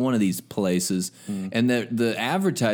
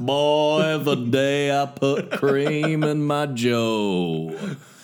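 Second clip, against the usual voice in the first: put-on Southern accent, male voice; 2 semitones higher than usual. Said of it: "You sound like a guy in the South".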